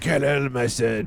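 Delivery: put-on voice of an old actor. Trying the same line back: Marlon Brando voice. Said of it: "Marlon Brando".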